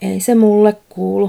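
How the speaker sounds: low muttering, mumbled words.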